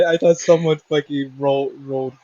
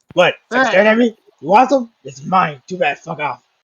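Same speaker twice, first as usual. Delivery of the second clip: put-on hostile, aggressive, confrontational voice; 4 semitones higher than usual. Showing how the Dragonborn should answer: aggressive Dragonborn voice. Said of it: "You gotta be like".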